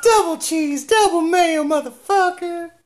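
shrill, very high, deliberately bad ranting voice. Co-host riffing on wrestling heels, doing a really bad Jim Cornette impression. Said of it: "a really bad Cornette impression".

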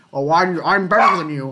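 put-on Scottish accent. Imitating an interview answer: Sean Connery impression. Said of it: "in this interview, he's like".

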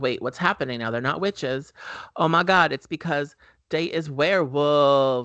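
ordinary delivery

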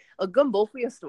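Creole-accented speech. Retelling a story, repeating a phrase in a Creole accent. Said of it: "I tried to say it in like a Creole accent".

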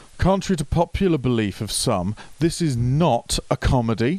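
acted haughty, high, imperious commanding tone. Retelling an audience member's remark from the front row, mimicking a haughty, imperious tone. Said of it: "stated in a haughty and imperious tone".

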